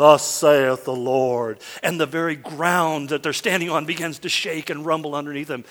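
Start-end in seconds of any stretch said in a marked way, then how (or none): 0.0-1.6 deep, booming, deliberate, drawn-out thundering proclamation. Retelling a story where, amid lightning and shaking, a booming voice calls out. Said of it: "this voice booms out".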